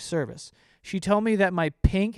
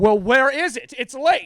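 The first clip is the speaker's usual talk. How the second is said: mock rude, high, raised angry yelling; 8 semitones higher, 6 dB louder than usual. Complaining about customers who are rude to store workers, imitating an angry yelling customer. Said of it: "Why are you yelling at me?".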